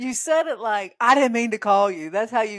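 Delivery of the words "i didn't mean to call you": loud, a little aggressive, going in hard. Retelling how the other speaker answered a call: imitating an aggressive tone. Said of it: "you were a little aggressive with it".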